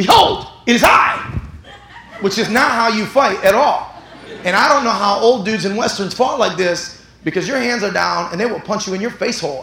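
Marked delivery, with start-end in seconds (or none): 0.0-1.4 mock very slow, grand, loud, drawn-out theatrical yell. Showing how they yelled at a man before a fight, retelling a theatrical yell. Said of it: "And I did it like this".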